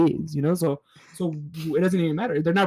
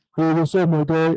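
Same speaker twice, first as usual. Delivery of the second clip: deliberately deepened, put-on deep tough-guy voice; 4 dB louder than usual. Trying to act tough greeting people, deliberately deepened voice. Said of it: "That's me trying to deepen my voice".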